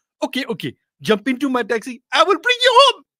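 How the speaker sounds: put-on Somali accent. Retelling a hometown taxi driver's reply to a passenger, as Abdul in an attempted Somali accent. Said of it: "I don't know a Somalian accent".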